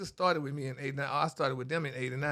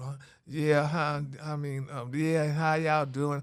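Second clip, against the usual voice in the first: slow, dragging, sluggish half-awake sleepy voice. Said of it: "you can't go to work".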